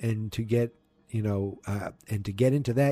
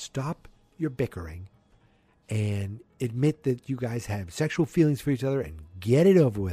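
usual speaking voice

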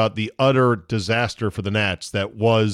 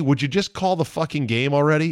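mock annoyed outburst, screamed; 4 semitones higher than usual. Recalling a boring player interview on TV that annoyed you, retelling a scream at the TV. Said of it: "I was screaming at the TV".

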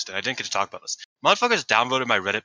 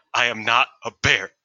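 put-on stern, serious voice; 4 dB louder than usual. Retelling a pre-match promo line, imitating Ami Sourei's stern tone. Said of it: "got very stern".

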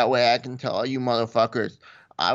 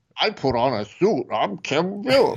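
voice pitched higher; 4 semitones higher than usual. Doing an impression of the other speaker in a suit: impression of the other speaker. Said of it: "that's an impression of you".

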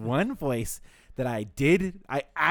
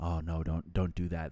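very low, stiff, deepened serious voice; 8 semitones lower, 6 dB quieter than usual. Imitating English dub voice actors: deepened serious voice. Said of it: "they're kinda deepening their voice".

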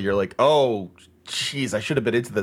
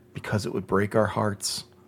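put-on grave, solemn, completely earnest tone; 4 dB quieter than usual. Retelling a friend's reply while watching a field of fireflies: imitating a very serious tone. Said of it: "he just very seriously goes".

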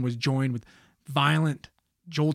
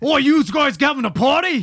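bad put-on English accent, very high and shrill; 11 semitones higher, 7 dB louder than usual. Repeating another person's remark about a party in a bad English accent. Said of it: "I can't do an English accent".

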